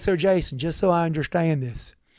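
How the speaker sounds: put-on Texas accent. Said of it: "I'm going to try to do his accent".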